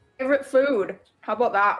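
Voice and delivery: words mashed, muffled through a mouthful. Looking up at them from a meat pie, talking with mouth full. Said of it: "with my mouth full".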